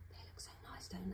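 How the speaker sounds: hushed whisper. Speaker alone in the garden, talking about watering and picking flowers: whispering. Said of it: "I don't know why I'm whispering".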